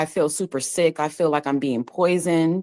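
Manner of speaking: plain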